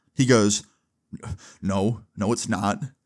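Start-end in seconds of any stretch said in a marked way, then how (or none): 1.6-2.8 crestfallen, defeated, deflated, beaten-down tone. Retelling the caller denying his school: imitating a defeated voice. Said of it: "you can just literally hear the defeat in his voice".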